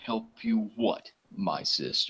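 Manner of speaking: deep thundering divine voice. As the statue glows in the temple, Heliod speaks in a loud booming voice. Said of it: "you hear a loud booming voice say".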